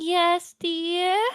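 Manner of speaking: put-on high-pitched, classic old-lady voice. Playing Nana in a prank bit, answering the other player in Nana Sprite's old woman voice. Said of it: "I can't do like that classic old woman voice".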